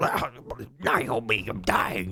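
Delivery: put-on phlegmy voice. Explaining what an actor did to his voice for a game: phlegmy David Hayter voice. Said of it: "ruin his throat and get it all phlegmy".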